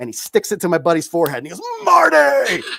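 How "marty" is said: very high, loud, wild, insane-sounding shriek. Retelling a friend's impression with a suction cup: Doc Brown impression. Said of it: "the most insane Doc Brown impression".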